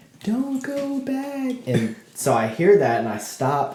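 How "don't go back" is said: classic ghostly voice, very high pitched. Retelling a voice heard while trying to sleep; classic ghost voice. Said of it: "the classic Ghost voice, like straight up like that".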